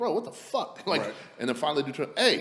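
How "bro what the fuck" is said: angry, very high, heated exasperation. Retelling waiting for a drink while customers laugh, acting out getting heated. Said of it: "I'm starting to get heated".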